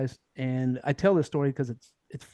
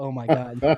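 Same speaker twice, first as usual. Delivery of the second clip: chuckling, laughing, with amused disbelief. Retelling own reaction on the helo: retelling own chuckle. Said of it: "I'm chuckling like".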